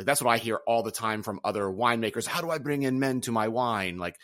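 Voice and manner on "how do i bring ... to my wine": weird, odd, hammed-up, put-on Italian accent. Quoting what other winemakers keep asking, weird Italian accent. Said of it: "I just did a weird Italian accent".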